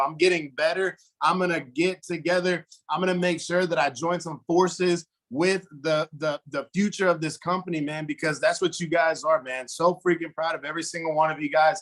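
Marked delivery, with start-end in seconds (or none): none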